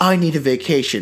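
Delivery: ordinary talk, nothing marked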